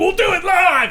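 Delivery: high, slow, drawn-out shout belted out. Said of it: "you've always heard me in these episodes say".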